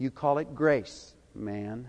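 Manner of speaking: low, strong, slow and firm voice. Retelling how one man halfway back answered the question, in a low but strong voice. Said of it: "said in a low but strong voice".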